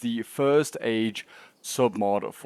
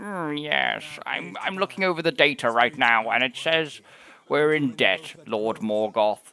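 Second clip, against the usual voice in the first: slow, measured, deliberate orc character voice; 2 semitones higher than usual. Joking about an orc unit that seems to wear glasses: voicing an orc wearing glasses. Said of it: "He looks like an orc that's wearing glasses".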